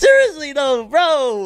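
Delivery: very high, squeaky, breaking voice. Talking to viewers about Crunchyroll, voice cracking. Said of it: "my voice just cracked".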